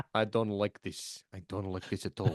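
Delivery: put-on sleepy flat Russian accent. Doing the manager as a sleepy Drago: sleepy Drago voice for Nuno. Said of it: "sleepy Drago is how you do Nuno".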